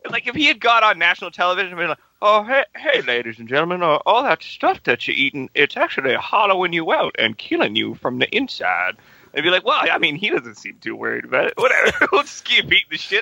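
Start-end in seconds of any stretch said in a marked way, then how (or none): 2.2-8.9 mock breezy, calm, unbothered, casual, zero urgency. Mocking how Mo would warn people on national television, imitating Mo's unworried calm. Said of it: "there was no fucking urgency at all in his voice".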